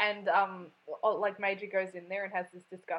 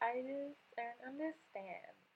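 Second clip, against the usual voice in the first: put-on very quiet, high, soft valley girl voice; 5 semitones higher, 11 dB quieter than usual. Describing a girl character's voice, quoting her line in a valley girl voice. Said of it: "It is a valley girl".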